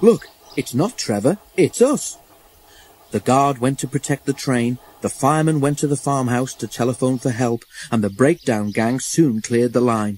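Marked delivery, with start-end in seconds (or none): 0.0-2.2 storybook style, called out, pitched-up exclaiming. The fireman, having climbed onto the tender, exclaiming. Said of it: "he exclaimed".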